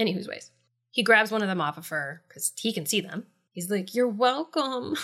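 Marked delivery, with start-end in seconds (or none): 3.9-5.0 mock keen, eager, puppyish puppy-dog tone. Retelling how a character answered, imitating puppy-dog eagerness. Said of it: "like a puppy dog".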